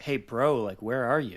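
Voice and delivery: put-on earnest, sincere tone. Retelling what an opponent asked during a match: imitating an earnest question. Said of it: "He sounded so earnest".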